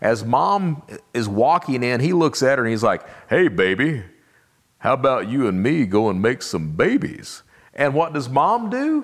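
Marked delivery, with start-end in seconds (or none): 3.3-7.4 suave, smooth, debonair flirtatious voice. Retelling how a man hit on Mom outside a club: imitating a suave pickup line. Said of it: "because he was that suave, debonair guy".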